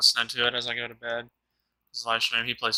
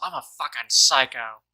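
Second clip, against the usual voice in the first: put-on screaming, louder; 5 dB louder than usual. Retelling how a streamer screamed after killing a whole squad: imitating someone screaming. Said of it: "the way he screamed it".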